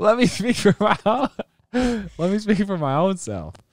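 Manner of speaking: very high, talking through helpless laughter. Answering a question about being stubborn, laughing while talking. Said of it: "I have tears in my eye".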